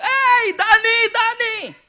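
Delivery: loud, high-pitched fan yell. Retelling calling out to a favorite player: imitating his own shouting at a player. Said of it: "Sumisigaw ako dun sa mga taong".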